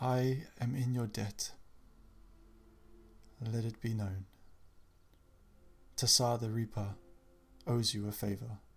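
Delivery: dragon voice, as if heard inside the mind. Voicing a dragon speaking into the players' heads: dragon's telepathic voice. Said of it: "you can all hear in your heads this voice".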